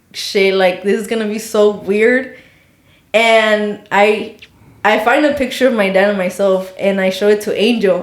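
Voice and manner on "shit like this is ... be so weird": ordinary talk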